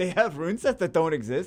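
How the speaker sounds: high, loud, shocked disbelief.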